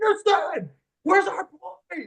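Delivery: shrieking, very high-pitched, frantic scream. Retelling how they reacted as time ran out, retelling a scream. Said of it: "I'm just screaming".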